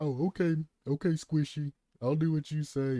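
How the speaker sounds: put-on sarcasm, loud and high. Imitating Rocket League players who brush off simple advice: imitating a sarcastic response. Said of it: "they'll give you a sarcastic response".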